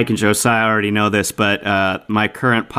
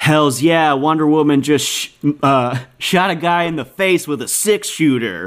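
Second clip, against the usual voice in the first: put-on sarcastic tone, pitched higher; 5 semitones higher than usual. Retelling a text from a friend, Steve, in a mock-sarcastic voice. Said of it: "he sarcastically he texts me".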